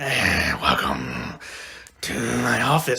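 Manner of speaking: low, very slow German doctor-like drawl. Retelling greeting haunted house visitors as a doctor: imitating own German doctor voice. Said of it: "I would talk like that".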